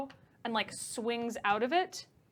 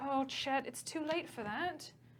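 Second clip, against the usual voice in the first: put-on soft, slow British accent; 3 semitones higher, 7 dB quieter than usual. A storyteller voices one character replying to another's plea, british accent. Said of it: "Oh, he's British still".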